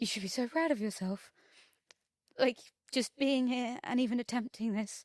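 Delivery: tearful, close to crying. Recounting kind words someone said to them, emotional, close to tears. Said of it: "it's gonna make me a little bit emotional".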